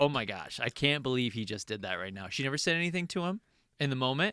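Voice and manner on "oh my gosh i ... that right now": put-on upset tone, lower pitch. Retelling a co-star's reaction to an insult: imitating someone upset. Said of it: "really upset by it".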